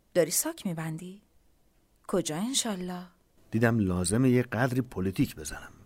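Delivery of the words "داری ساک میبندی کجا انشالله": astonished, surprised, soft, pitched very high. The narrator's wife reacts as he goes to his old bag: surprised. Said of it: "همسرم با تعجب گفت".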